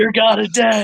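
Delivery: shouting in character voice. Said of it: "but I'm just yelling it".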